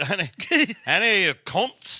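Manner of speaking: put-on London Cockney accent. Joking about how to pronounce a word, Cockney accent. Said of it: "I'm doing it Cockney now".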